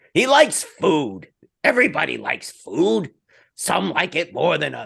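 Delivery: bad, rough, high, swooping, creaky put-on voice. Joking about a retired player eating a lot: awful Gilbert Gottfried impression. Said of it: "That's my awful Gilbert Gottfried impression".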